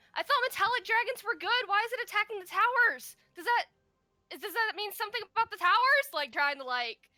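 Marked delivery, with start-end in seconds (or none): 0.2-6.1 shrill, loud yelling, pitched way up. Voicing a character hiding behind a stand: character yelling out. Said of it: "She's gonna yell out".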